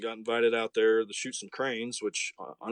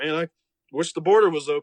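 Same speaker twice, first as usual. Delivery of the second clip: loud, pitched-up, sarcastic put-on longing; 5 semitones higher, 7 dB louder than usual. Retelling a buddy's Snapchat remark about the border: imitating a sarcastic remark. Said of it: "so sarcastically".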